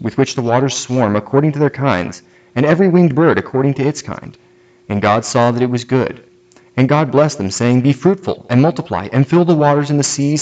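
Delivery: ordinary talk, nothing marked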